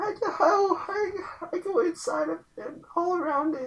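put-on crying voice. Answering a question in a comic bit as Tim: put-on crying Tim voice. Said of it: "why do you sound like you're crying all the time?".

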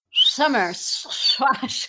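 whistly sibilants whistling through the teeth. Answering a request to say a phrase whistling through the teeth. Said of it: "Can you say summer squash that way?".

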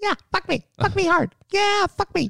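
very high, effeminate, flirtatious voice. Repeating the impression after being asked: impression of a nelly bottom. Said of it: "can I get that impression one more time?".

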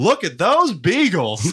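acted loud blurted voice. Retelling his sleep-deprived girlfriend speaking up in dead silence: retelling speaking very loudly. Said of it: "very loudly says".

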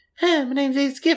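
very high voice with no toughness or bravado. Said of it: "like [name] voice almost".

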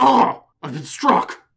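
bad dramatic voice, very high, very loud. Mocking action-movie characters who react to being punched, in a terrible put-on voice. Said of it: "That's a terrible voice".

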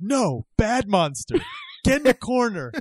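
very high, shrill, swooping acted yell. Recounting a wrestling match, voicing one wrestler yelling at another: retelling a yell. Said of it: "and he yells at him".

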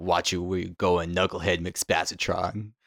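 deep, slow put-on voice. Acting out a line to a tourist who runs into you: deep Salty Spittoon-style voice. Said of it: "say it in, like, nice deep voice like that, Salty Spittoon style".

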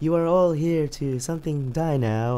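slow, calm, menacing villain voice.

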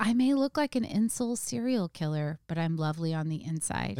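ordinary delivery

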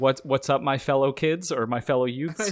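fake awkward grown-up voice. Quoting a meme of an adult trying to be a kid: Steve Buscemi meme voice. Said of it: "the Steve Buscemi meme where it's like".

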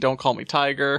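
ordinary talk

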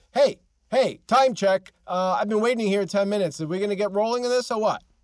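loud, high-pitched yell.

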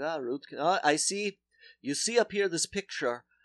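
imitated Polish man's accent. Retelling what a dentist said on arrival: imitating a Polish man's accent. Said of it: "and I'll do a voice".

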